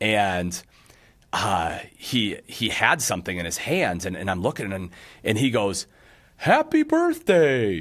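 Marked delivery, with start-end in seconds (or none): 6.4-7.8 very high cartoon voice with big swooping pitch swings. Retelling a birthday greeting from a visitor to the campsite, in a Yogi Bear voice. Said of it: "in a Yogi voice".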